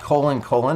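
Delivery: word "colon" stressed, said high-pitched and loud. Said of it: "not semicolon, but colon, colon".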